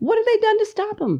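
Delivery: very high, voice leaping and shooting way up.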